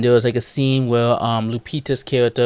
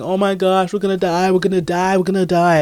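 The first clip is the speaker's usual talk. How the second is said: frantic, high, panicked scream; 8 semitones higher than usual. Retelling a scene where a man panics, imitating panicked screaming. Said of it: "he was panicking and screaming".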